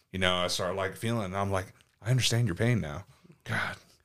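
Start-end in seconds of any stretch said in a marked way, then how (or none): none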